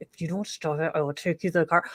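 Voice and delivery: demonic, menacing, threatening voice. A mom warns her misbehaving child at Olive Garden, in a demonic mom voice. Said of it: "that demonic voice we use".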